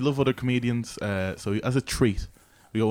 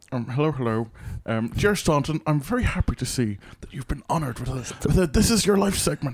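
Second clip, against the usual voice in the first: bad put-on Irish accent, pitched higher; 2 semitones higher than usual. Introducing the President of Ireland as a podcast guest, doing a bad Michael D. Higgins impression. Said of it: "Worst voice ever".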